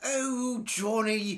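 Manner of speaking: terrible, bad fake British accent. Arguing whether British accents are sexy, a speaker tries a bad fake British accent. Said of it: "I have the worst UK accent ever".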